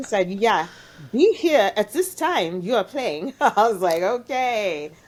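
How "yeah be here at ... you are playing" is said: put-on German accent, matter-of-fact delivery. Retelling what a woman said to the speaker, in her German accent. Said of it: "in her German accent".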